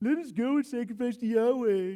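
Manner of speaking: put-on childish, high, sarcastic, mocking parroting. Reading scripture, then acting out the ruler taunting the people: imitating Pharaoh's mocking mimicry. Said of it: "I can hear him mimicking them".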